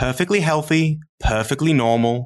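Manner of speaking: lovely put-on British accent. Retelling the midwife reading out the results: imitating a British accent. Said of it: "her lovely British accent".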